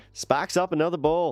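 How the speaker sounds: put-on Boston-sounding accent. Reacting to someone after a toast, slipping into a Boston accent. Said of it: "say it like I'm from Boston".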